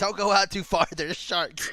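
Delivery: long, drawn-out, stretched mom-style calling voice. Imagining a mom at the beach calling to her kids: imitating a mom yelling. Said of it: "hearing the mom yelling".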